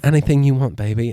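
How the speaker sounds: put-on sexy, sultry voice with a British accent. Describing wishes, the speaker voices Elizabeth Hurley in a sexy British accent. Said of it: "she's got that sexy British accent".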